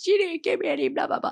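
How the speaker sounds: put-on high, tearful, crying child's voice. Retelling a daughter's complaint about not being given any: imitating a crying child. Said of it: "she's crying, and she's like".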